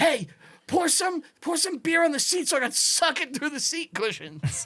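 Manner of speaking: very high, hot-tempered, angry character voice. Recounting an ad-lib voicing the trunk in a short film, put-on angry guy voice. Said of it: "a note off my angry guy character".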